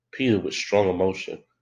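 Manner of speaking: ordinary delivery, nothing marked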